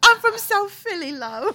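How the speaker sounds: fake English accent, very high-pitched. Joking about meeting a celebrity, answering in a put-on English accent. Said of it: "put on the, the English out-, a-, accent".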